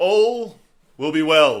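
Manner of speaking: booming, drawn-out boisterous shout, very loud. A voice steps in beside the listener and calls out: booming, boisterous yell. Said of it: "just yells out in the, in the biggest boisterous sound you've heard".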